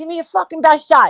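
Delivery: goading, heated, high-pitched half-yell. Retelling a fight on the front porch, screaming at a brother: retelling a scream. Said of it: "I'm screaming at him".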